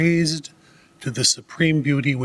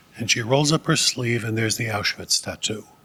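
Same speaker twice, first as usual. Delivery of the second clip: ordinary talk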